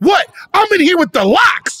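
brash, loud, high-pitched shouted outburst. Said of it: "Diddy had hit somebody with a bottle and was like".

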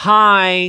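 deliberate, cutting mock-polite tone, sweet then drawn out. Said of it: "I'd be like".

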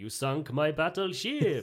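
put-on Swedish accent. After asking to try one, the speaker delivers a line in a Swedish accent. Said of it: "Can I do a Swedish accent?".

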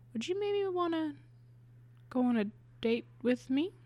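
hushed, soft, high, quiet voice. Retelling how she asked over coffee: imitating someone speaking quietly. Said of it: "she said kind of quietly".

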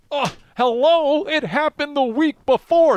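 very high, yelled words. Ranting that the same thing happened a week earlier: sounding like Herm Edwards. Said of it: "as I sound like Herm Edwards".

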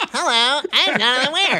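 tiny, squeaky, high cartoon voice. Retelling a demo tape of Jonathan Weir's first time on the radio, imitating him as a Smurf. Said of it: "he sounded like a Smurf".

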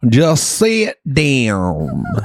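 put-on slow rural country accent, "down" stretched long. Quoting how another man said the line, in a country accent. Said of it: "He said it with a country accent like this".

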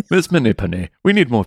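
put-on Welsh accent. Reading a script line as the other speaker coaches, in a Welsh accent. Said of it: "read that in a Welsh accent".

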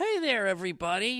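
very high, loud, cute cartoon voice. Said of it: "had this cute little voice that was a little more high-pitched".

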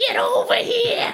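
very high-pitched, cat-like voice. Acting out a person back from virtual reality, voice like your cat's. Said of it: "that kinda sounded like your cat's voice".

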